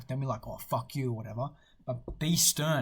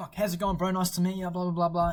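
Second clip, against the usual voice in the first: super high-energy, hyped-up, high-pitched voice; 6 semitones higher, 4 dB louder than usual. Explaining how to greet tough guys in person, super high energy greeting. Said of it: "come in super high energy".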